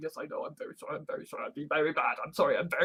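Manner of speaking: self-abasing, groveling delivery. Showing how one approaches critics: mock groveling apology. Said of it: "groveling and saying".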